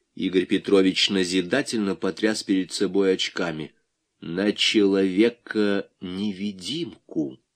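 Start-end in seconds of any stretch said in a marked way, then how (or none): 4.2-7.4 distinct, clearly spaced-out, word-by-word delivery. Correcting the other man's wrong guess, he gives the answer, said distinctly, word by word. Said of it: "сказал он раздельно".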